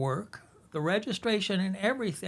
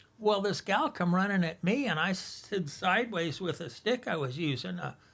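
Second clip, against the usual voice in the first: usual speaking voice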